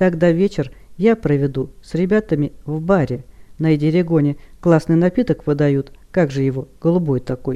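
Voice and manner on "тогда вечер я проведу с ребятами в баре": usual speaking voice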